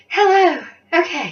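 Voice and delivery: winded, out-of-breath loud voice. Vlogger back on camera after running to the shop, out of breath. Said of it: "I am out of breath".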